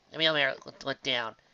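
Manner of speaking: plain reading voice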